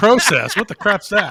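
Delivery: loud, high, mocking incredulous tone.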